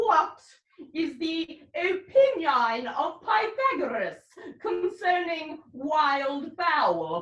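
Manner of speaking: slow, wildly drawn-out fake curate voice. Disguised as the curate visiting the lunatic, questioning him: disguised as the curate. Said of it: "[name], the curate who comes to visit [name], the lunatic. / Nay, I pray thee, put on this gown and this beard. In that way, you will look like [name]. / Master Parson. / [name], the curate who comes".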